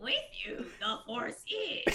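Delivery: slow, deliberate, drawn-out character voice. Asked by the other speaker to try a voice: Yoda voice. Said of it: "do your best Yoda voice right now".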